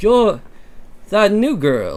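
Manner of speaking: high-pitched, put-on British accent. Asked to read a part, channeling a Harry Potter voice. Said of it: "Channel Harry".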